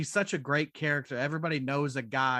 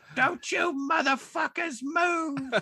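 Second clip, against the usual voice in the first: very high, slow, drawn-out threatening voice; 13 semitones higher than usual. Quoting the robbery scene from the movie: spot-on impression of the actress. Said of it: "That is a spot on impression".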